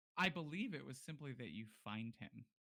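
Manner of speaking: ordinary delivery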